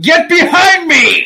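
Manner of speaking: loud high-pitched shout. Playing a character jumping in front of a blind man: yelling in character. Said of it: "jumps in front of the blind old man and yells".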